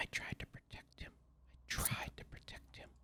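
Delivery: hushed, soft, low muttered whisper, repeated. Storyteller voicing an unseen whisper repeating in the room, soft low muttering whisper. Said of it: "the soft voice speaking in a low muttering tone".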